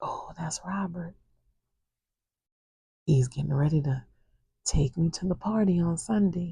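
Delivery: soft, hushed whispered voice. Retelling what Miss Marie said at night: imitating Miss Marie whispering. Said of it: "I hear Miss Marie whisper".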